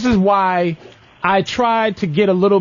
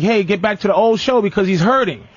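ordinary delivery

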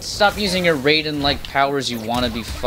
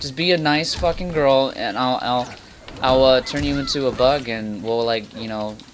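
ordinary talk, nothing marked

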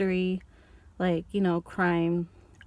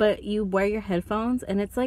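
normal talking voice

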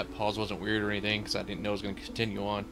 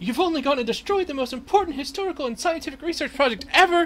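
put-on woman's voice, much higher and louder; 4 dB louder than usual. Voicing a character in a role-playing game scene, female character voice. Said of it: "I think she's a female character. ... I'm working there".

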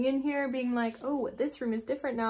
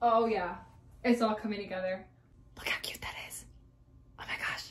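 whispering, much quieter; 3 semitones lower, 8 dB quieter than usual. Speaker who has been decorating a wall for hours: whispering. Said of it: "I don't know why I'm whispering".

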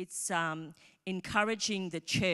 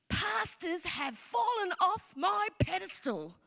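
play-acted very high, shrill, furious, in-your-face screaming; 13 semitones higher than usual. Retelling how a young girl screamed in their face: imitating someone screaming. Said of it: "she screams at me".

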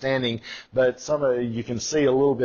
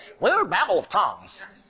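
put-on old-time newsreel reporter voice, much higher pitch; 7 semitones higher than usual. Quoting an old Azusa Street news report in a 1920s news reporter voice. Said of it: "those 1920s news reporter voices".

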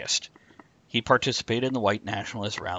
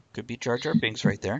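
usual speaking voice

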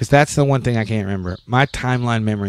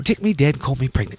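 put-on British accent, pitched up; 5 semitones higher than usual. Repeating a saying heard in a movie last night, in a British accent. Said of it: "you have to say it in a British accent".

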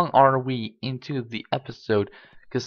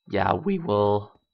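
voice crack, lower; 4 semitones lower than usual. Talking through what to do next: voice cracking. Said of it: "that voice crack".

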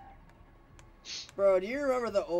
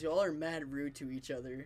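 ordinary delivery

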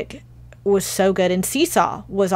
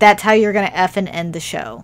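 plain

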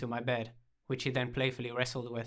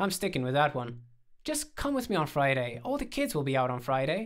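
plain reading voice

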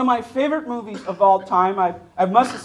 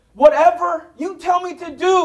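play-acted, high-pitched screamed soldier voice; 7 semitones higher than usual. Retelling a favorite movie's boot camp scene, answering the drill sergeant, screaming as Forrest Gump. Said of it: "And he screams".

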